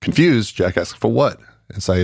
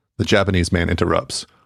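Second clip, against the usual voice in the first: plain reading voice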